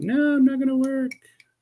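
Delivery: very high, squeaky voice. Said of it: "be like".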